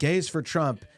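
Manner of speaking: shout. Retelling how a man in a crowd called out: imitating a yell from the crowd. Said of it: "he yelled out".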